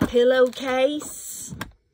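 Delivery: loud, high put-on Southern US accent on "pillowcase". Saying one word to show off a southern accent. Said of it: "Listen to my southern accent".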